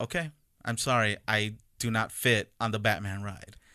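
normal talking voice

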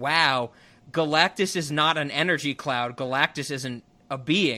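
plain

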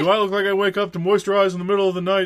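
earnest, dead sincere tone, pitched a bit high. Retelling a line from the show: Big Show impression. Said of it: "That's my Big Show impression".

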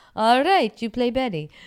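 very high, loud, broken English. Retelling how the man making the movie gave her a part, imitating his broken English. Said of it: "he spoke very broken English".

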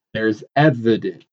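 slow, drawn-out, deliberate delivery. Speaker says a phrase slowly in place of air quotes, slow and deliberate. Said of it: "I said it slowly for a reason, because I can't show air quotes".

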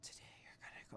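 soft, soothing, super mellow, hushed breathy whisper. Speaker describing the meditation speakers, mimicking a super mellow meditation voice. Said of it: "Like super like mellow".

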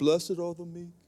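put-on very quiet, dull, murmured English accent. Mocking how Jesus talks in old movies, dull English-accented movie Jesus. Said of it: "Jesus is blonde and has an English accent ... dull and boring".

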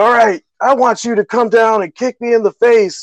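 put-on cocky taunting. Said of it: "talking smack".

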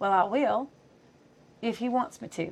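soft, slow, cute little Southern drawl. Retelling what a man answered when asked about tongues: imitating a cute Southern accent. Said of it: "cute little Southern accent".

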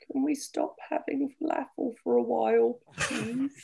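tiny, high, creaky, put-on little voice. Retelling what someone once said: imitating a little voice. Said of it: "the little voice that just went".

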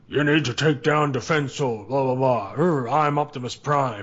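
terrible, cheesy, drawn-out fake robot commander voice. Mocking the commercial's stand-in voice for Optimus Prime: imitating a bad Optimus Prime voice. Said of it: "it's like this person's going".

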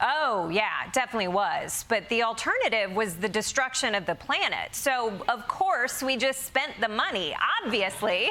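usual speaking voice

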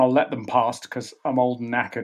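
normal talking voice

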